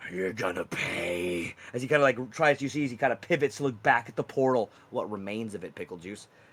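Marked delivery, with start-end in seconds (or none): 0.1-1.5 very low, deep, drawn-out creature voice. Voicing the Wendigo as it ignores a roar: Wendigo voice. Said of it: "He kind of ignores your roar and goes".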